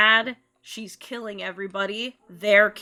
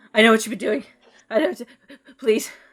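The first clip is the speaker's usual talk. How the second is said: loud, rushed, frightened pleading, words tumbling out; 2 semitones higher, 5 dB louder than usual. Voicing a shaking character who raises his hands: terrified pleading. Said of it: "his, like, hands are trembling".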